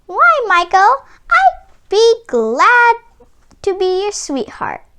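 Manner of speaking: tiny, high, delighted, squealing mouse voice. Reading a story, the mouse answers Meeko in a tiny delighted mouse voice. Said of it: "but the only living thing in sight was a little mouse on a table. / she said, / came a tiny voice".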